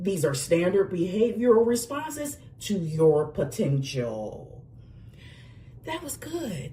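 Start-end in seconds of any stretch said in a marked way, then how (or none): 0.0-4.6 lively, animated commercial announcer voice with swooping pitch. Recording a reading intro to reuse for a voiceover audition; animated commercial voice. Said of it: "use my animated commercial voice".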